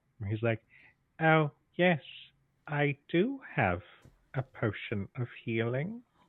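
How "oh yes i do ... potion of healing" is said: very slow, swooping, skin-crawling merchant voice. Describing a helpful merchant character he'd make, in a creepy skin-crawling merchant voice. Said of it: "his manner of speaking makes everybody's skin crawl".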